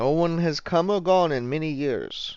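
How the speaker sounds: poor put-on Russian accent. An officer character answers a question about the mansion, in a shitty Russian accent. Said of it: "adopt my my shitty Russian accent?".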